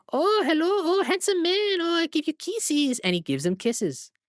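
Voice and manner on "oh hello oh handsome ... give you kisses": very high-pitched, rising puppet voice. Retelling a movie scene where a man's hand talks: Senor Pepe's high-pitched voice. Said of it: "who talks in a high pitched voice".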